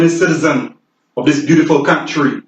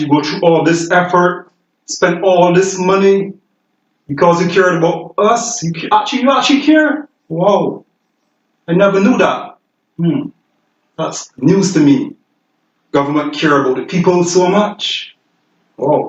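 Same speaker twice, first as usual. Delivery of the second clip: sarcastic, with put-on wonder and amazement; 3 semitones higher than usual. Speaker addresses the Prime Minister, sarcastic. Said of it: "being sarcastic for people that slow".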